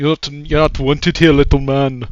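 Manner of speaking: put-on heavy English accent. Retelling how people stopped him, quoting them in a thick English accent. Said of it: "talking a thick English accent is like".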